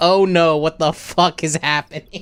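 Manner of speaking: ordinary talk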